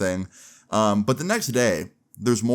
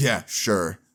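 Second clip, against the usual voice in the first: put-on mocking, scornful laugh. Retelling how the girlfriend's dad reacted to an excuse: imitating a mocking laugh. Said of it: "He literally laughed in my face".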